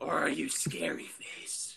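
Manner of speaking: soft, slow, whispered, menacing superhero voice.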